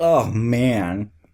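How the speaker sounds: mock sarcastic, imitated sarcastic tone. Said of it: "He has time to make a sarcastic comment".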